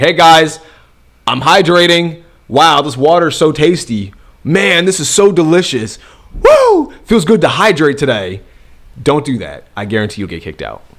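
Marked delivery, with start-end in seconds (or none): 0.0-8.4 showy, loud, high-pitched, drawn-out announcing voice. Acting out someone in a library letting everyone know: mock announcing to everyone. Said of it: "you're letting everyone know and you're like".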